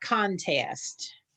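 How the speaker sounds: contest, stress on the first syllable con. Answering with the accent on the first syllable: stress on first syllable of contest. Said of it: "Contest with the accent on the first syllable".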